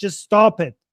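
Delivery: imitated pained pleading. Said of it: "pain in his voice".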